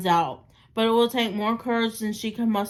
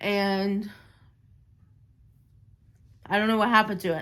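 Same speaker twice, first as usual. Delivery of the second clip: speaking through tears, crying. Sharing a memory about a younger brother, crying while talking. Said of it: "I don't know why I'm crying about this".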